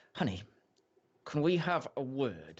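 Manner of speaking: forced out through gritted teeth. Voicing Belladonna Archeron as she pushes you aside, speak through gritted teeth. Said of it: "She's like saying it through gritted teeth".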